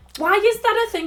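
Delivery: hysterical and high-pitched. Complaining that two different actions share one button: hysterical and high-pitched. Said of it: "Sorry, I'm getting hysterical".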